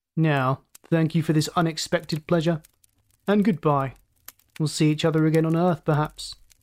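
ordinary delivery

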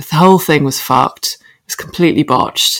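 normal talking voice

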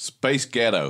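put-on American accent. Saying two words when asked to: American accent. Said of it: "in a slightly American".

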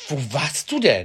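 accusing, reproachful. Retelling how the listener knocked at the window and asked where they were: mock-reproachful. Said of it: "mit dem vorwurfsvollsten Blick und sagst".

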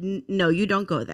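plain

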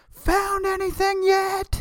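very high, slow, drawn-out shout.

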